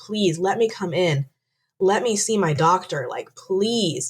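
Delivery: acted sobbing, tearful pleading. Retelling begging a receptionist to be let in, reenacting sobbing and begging. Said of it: "I'm sobbing and begging and pleading her".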